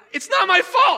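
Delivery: mock very high, very loud, excited triumphant outburst. Retelling the moment a baking mix-up turned out not to be the speaker's fault: retelling an excited outburst. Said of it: "I was so excited to be not guilty".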